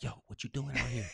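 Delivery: put-on squirrel voice, whispering. Retelling what a squirrel said when it walked up: imitating a whispering squirrel. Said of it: "He was whispering something".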